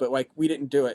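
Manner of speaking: plain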